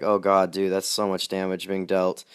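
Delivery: plain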